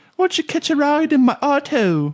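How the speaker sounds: fake British accent pitched way up high. Asked to speak British, answering in a put-on British accent. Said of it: "can you speak British for me?".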